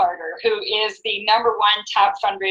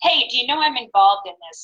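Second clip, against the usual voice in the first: plain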